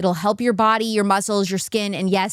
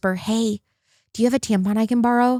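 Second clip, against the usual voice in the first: imitated whisper. Retelling asking the next stall for a tampon: imitating own whisper. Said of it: "I whisper".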